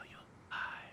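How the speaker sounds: soft, unvoiced whisper.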